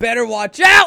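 very loud, very high-pitched yell. Saying a movie title aloud to another speaker: yelling. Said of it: "Why are you yelling?".

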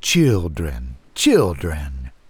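smooth, silky, sleek low voice. Another voice drifts in from the window, calling to the children: sleek, silky voice. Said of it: "This one sleek as silk".

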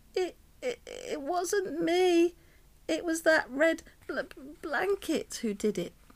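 stuttering. Ollie, squirming under Miss Itch's fingers, denies the blame; stuttering. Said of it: "Ollie stuttered".

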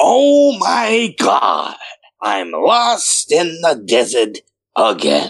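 very slow, drawn-out, swooping sing-song put-on character voice. Voicing a desert hallucination story, in a Stan Lee impression. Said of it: "I kind of have a little Stan Lee impression in the chamber".

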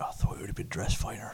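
hushed, very quiet whisper. Whispering into the dwarf's ear while bowing, in character: whispering in character. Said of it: "I kinda whispered to the dwarf's ear".

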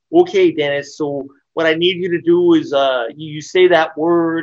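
put-on very strong Midwestern accent. Retelling a director asking an actor to say a word: imitating a super midwestern accent. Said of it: "with his super Midwestern accent".

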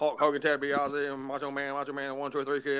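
put-on auctioneer call, rapidly rattled off. Mimicking the man they were just discussing: auctioneer patter. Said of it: "he sounded like an auctioneer there".

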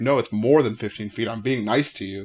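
plain

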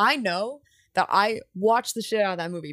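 normal talking voice

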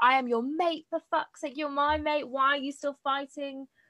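high, heated, exasperated voice, held back. Recapping a book, acting out him screaming at her, imitating someone screaming. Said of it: "he's screaming at her like".

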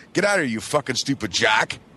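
ordinary delivery

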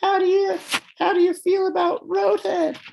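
squeaky, very high-pitched pop-star voice. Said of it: "the most [name] voice I've ever heard".

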